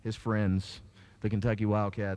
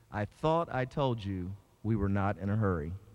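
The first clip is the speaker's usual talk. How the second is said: mock severe, very stern reproving tone. Retelling what a man said at the car window, retelling a very stern voice. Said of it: "in a very stern voice".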